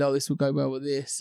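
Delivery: ordinary talk, nothing marked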